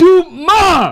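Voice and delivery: emotional, passionate, very high and drawn out. Showing how to swear freely: swearing with passion and emotion. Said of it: "say it with passion and emotion".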